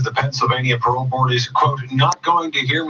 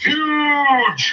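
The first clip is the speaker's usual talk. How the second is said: big booming announcer voice, higher pitch; 13 semitones higher than usual. Answering that big sales get the voice: big announcer voice. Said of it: "big announcer voices".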